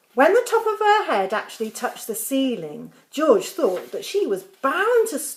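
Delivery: plain reading voice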